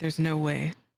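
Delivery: low under-breath whisper. Playing a character placing letter pieces as a storm builds: whispering under breath. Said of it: "And a whisper under my breath".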